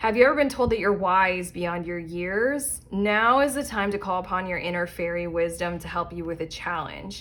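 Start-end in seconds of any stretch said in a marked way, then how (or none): none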